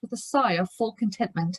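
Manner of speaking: plain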